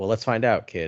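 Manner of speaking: ordinary talk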